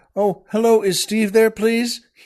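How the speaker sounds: put-on high, overly well-mannered, polite child's calling voice. Imitating kids politely calling on the phone: imitating polite kids on the phone. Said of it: "the good manners on the gu-".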